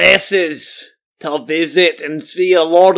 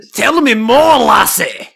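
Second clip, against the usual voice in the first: slow, stretched-out, pitched-up cartoon voice; 5 semitones higher than usual. Greeting a co-host who brings up Scotland: loud Shrek voice. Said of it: "Shrek's got a set of lungs on him".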